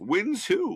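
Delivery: high sage voice. Host asking viewers for predictions, in a Yoda voice. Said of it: "Says Yoda".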